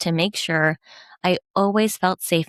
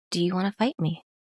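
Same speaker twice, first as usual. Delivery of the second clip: cool, stone-still, calm, collected, hushed voice; 5 dB quieter than usual. Retelling what a man asked the speaker, imitating a calm, collected voice. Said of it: "in that calm and collective voice".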